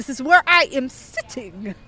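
terrible, bad put-on Italian accent. Acting out a woman's reply about a seat, in a terrible italian accent. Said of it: "This is a terrible Italian accent".

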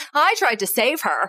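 very defensive, high-pitched protesting tone. Recapping an episode, quoting a character in the therapist's office: mock-defensive. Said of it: "very defensively goes".

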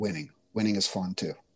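acted under-the-breath mutter. Retelling an aside made to the 12-year-old girls about today's game: muttered under breath. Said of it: "Then under my breath".

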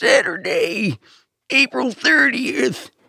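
put-on very high old-man monster-truck hype announcer voice. Co-host shows how a very old man would do a monster-truck voice. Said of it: "a very old man doing Monster Truck voice would be like".

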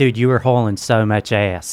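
imitated Philadelphia accent. Friends discussing how people talk in Philly, imitating a Philly accent. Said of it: "Philly's like".

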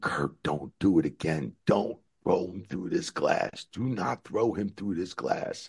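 high, held-back, scream-like call. Recalling screaming at someone during a match, retelling a scream. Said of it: "and I kept screaming".

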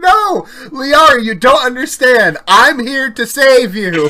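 mock upset, insistent, high, loud outburst. Retelling a childhood reaction while playing Mass Effect: imitating own upset past self. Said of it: "I was getting so upset".

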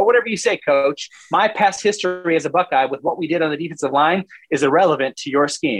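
plain

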